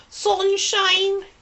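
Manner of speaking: Manchester accent. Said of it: "That's my Manc accent".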